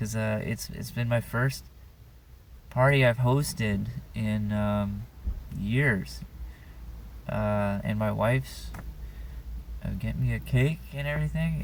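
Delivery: voice slightly choked with emotion. A man about to turn thirty talks about hosting his first party in years, a little choked up. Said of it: "I'm getting a little choked up".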